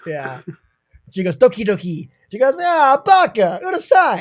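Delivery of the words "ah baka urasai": put-on New York accent, much higher and slower. Quoting what she says, while a co-host teases the delivery, in a New York accent. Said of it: "you do it like a fucking New Yorker".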